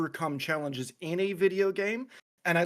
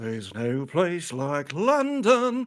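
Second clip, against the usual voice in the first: slow, demonic voice, words drawn out; 5 dB louder than usual. Showing the voices they can do: Sweeney Todd voice. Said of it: "Demon Barber of Sl-, Street, Fleet Street from Sweeney Todd".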